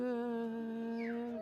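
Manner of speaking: word stretched as slow as possible. At the end of story time, leading listeners in a goodbye game: slow. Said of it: "say goodbye as slow as we can".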